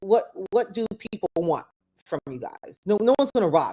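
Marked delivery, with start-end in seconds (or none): none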